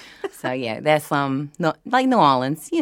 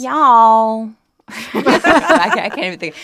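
put-on high, loud sorority girl accent; 8 semitones higher, 7 dB louder than usual. Recalling a hilarious moment, a speaker slips into a sorority girl type accent. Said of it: "a sorority girl type accent".

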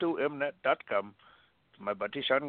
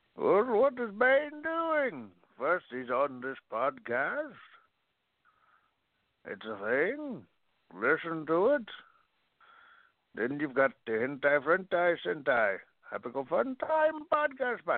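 put-on villain voice; 3 semitones higher than usual. Answering a question about what Bane is doing: Bane voice. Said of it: "I'm tired of that voice".

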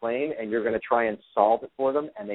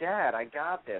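put-on soft, slow five-year-old child voice; 4 semitones higher, 5 dB quieter than usual. Recalling answering his father as a boy, five-year-old child voice. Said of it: "I said in my five-year-old voice".

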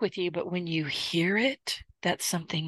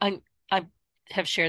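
stammering, tripping over words. Talking with a co-host for listeners of the show, stuttering. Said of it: "I'm stuttering again".

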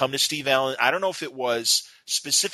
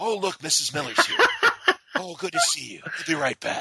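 animated, high sing-song with swooping pitch; 5 semitones higher than usual. Speaker shows off their best impression while chatting: Merv impression. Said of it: "That's my best Merv".

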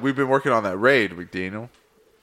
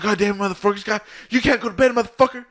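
mad ranting, angry outburst pitched very high; 10 semitones higher than usual. Retelling the reaction when the speaker wanted to go to bed, imitating Chance being mad. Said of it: "Chance was all mad".

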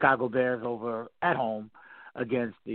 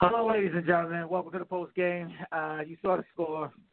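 laughing through the words, pitched up; 8 semitones higher than usual. Solo radio host opens the post-game show, laughing while talking. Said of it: "sorry, I'm laughing".

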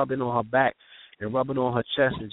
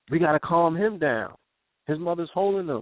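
normal talking voice

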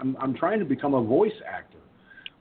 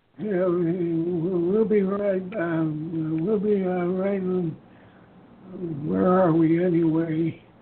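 put-on elderly voice, higher pitch; 5 semitones higher than usual. Recreating his intermission bit that a viewer mistook for an old person, old person voice. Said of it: "I'm sitting down and I'm going".

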